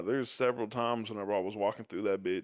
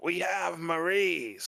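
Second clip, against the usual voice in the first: high-pitched, sinister put-on villain voice; 8 semitones higher than usual. Retelling how a man answered after hearing the speaker's name: put-on evil voice. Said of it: "he starts putting on this evil voice".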